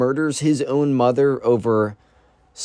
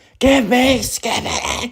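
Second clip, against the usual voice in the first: put-on little kid's demanding cry, pitched way up; 11 semitones higher than usual. Retelling a kid held by security guards: imitating a kid screaming. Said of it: "he's screaming".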